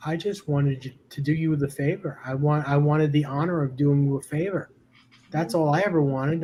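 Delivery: ordinary talk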